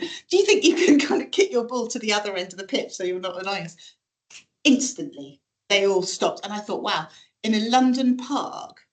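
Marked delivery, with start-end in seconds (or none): none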